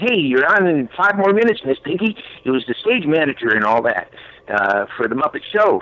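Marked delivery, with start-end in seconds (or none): 0.0-2.2 very high-pitched, eager, go-getter voice. Recalling how the character sounded in the older shows, Scooter go-getter voice. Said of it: "he was more like uh, the go getter".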